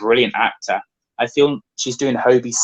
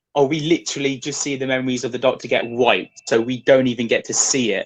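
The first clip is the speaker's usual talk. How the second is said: usual speaking voice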